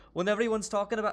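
fast, rattled-along put-on Scottish accent. Quoting a UK guy from a TikTok, in a Scottish accent. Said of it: "that's my Scottish accent".

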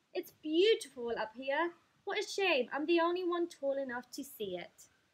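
loud, high, teasing, bragging taunt. Narrator reading the mean stalk's line to Jack, teasing. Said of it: "it teased".

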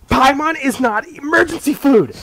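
mock very high, loud, annoyed, ticked-off outburst. Retelling a game scene where Paimon objects: imitating ticked-off Paimon. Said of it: "Paimon gets really ticked off and goes".

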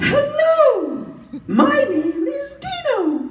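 very high, very slow head voice. Demonstrating where the voice comes from, introducing himself in a top of the head voice. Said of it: "that's basically a top of the head voice".

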